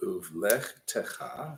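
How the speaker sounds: slow, careful, syllable-by-syllable reading.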